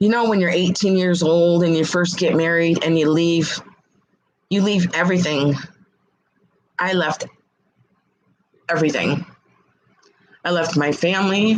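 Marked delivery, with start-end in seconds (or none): 4.5-11.6 emotional, getting upset, emotion rising. Recalling leaving family at eighteen after marrying, getting upset. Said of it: "I'm getting upset".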